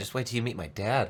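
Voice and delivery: mock sarcastic tone. Acting out the look on a woman's face: imitating a sarcastic remark. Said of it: "Just pure sarcasm".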